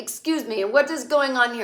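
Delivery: bad half-French, half-German accent. Retelling a scene where a man walks in on a woman smoking, in a terrible foreign accent. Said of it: "he's got this terrible accent".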